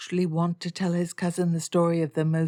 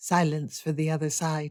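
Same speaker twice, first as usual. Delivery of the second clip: ordinary delivery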